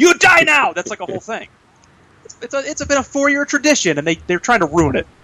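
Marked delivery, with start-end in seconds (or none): 0.0-0.7 put-on French racer voice, higher pitched. Retelling a yearly racing-game video: Sacha Baron Cohen Talladega Nights voice. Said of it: "I do the Sacha Baron Cohen Talladega Nights voice".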